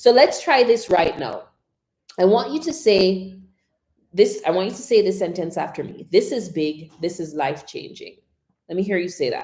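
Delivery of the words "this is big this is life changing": flat, level monotone with no inflection. Saying the repeat-after-me sentence as an example, in monotone. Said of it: "That was just monotone".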